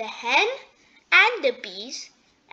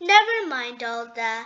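usual speaking voice

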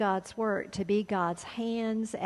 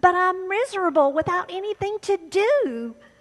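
very high, very loud, shrill, frantic, frustrated voice; 11 semitones higher, 8 dB louder than usual. Telling a story, the man protests to the attendant: frustrated. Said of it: "he said in frustration".

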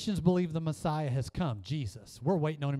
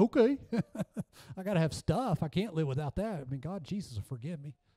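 sarcastic, put-on mocking tone. Speaker mocking the American church's attitude, in a mock sarcastic voice. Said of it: "I'm being sarcastic".

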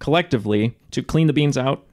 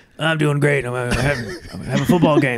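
croaky frog-like voice. Joking that a guest is on the show, doing a Patrick Mahomes impression. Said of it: "he sounds like a frog".

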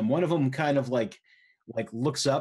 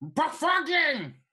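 piercing, very high-pitched goblin shout. Voicing a goblin who sees the player: goblin yelling. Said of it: "his eyes go wide, and he yells".

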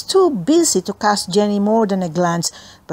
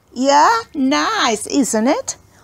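slow, high-pitched, laughing the words off; 6 semitones higher than usual. Reading a story, a girl answers another girl who wants her lunchbox back: laughing. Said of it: "Laughed Sharon".

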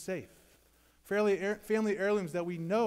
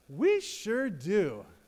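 bright, cheerful, glad, very happy tone; 2 semitones higher, 3 dB louder than usual. Retelling the drive-thru lady's answer: imitating a very happy reply. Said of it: "said very happily".

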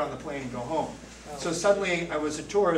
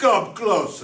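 rough, gruff, raised put-on nun voice; 4 semitones higher, 8 dB louder than usual. Retelling a confession, the speaker quotes the sister, imitating a gruff nun. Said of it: "with a real gruff tone".

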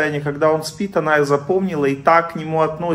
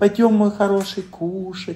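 mild, gentle, tender coaxing voice; 3 semitones higher than usual. Showing how to talk to a husband, soft, gentle voice. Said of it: "Мягким, нежным голосом".

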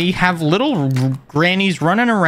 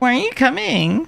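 mock sassy tone, higher pitch; 8 semitones higher than usual. Imitating a game character who keeps asking why they aren't coming: imitating a sassy voice. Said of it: "just sassy".

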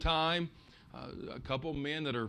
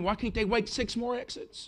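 mock all-out, high-pitched screaming; 7 semitones higher, 5 dB louder than usual. Retelling pulling over so kids can use the bathroom: imitating own screaming. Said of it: "I'm screaming".

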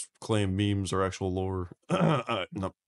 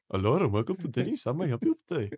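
put-on imitation Arabic accent; 5 semitones higher than usual.

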